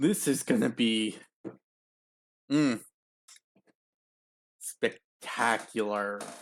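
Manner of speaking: slow, grimacing sarcasm in the voice. Starting a reaction video, sarcastic, grimacing voice. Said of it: "Notice the grimace in my voice and the sarcasm".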